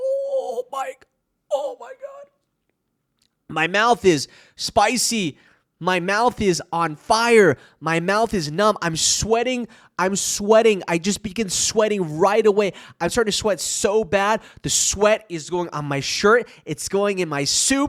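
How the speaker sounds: plain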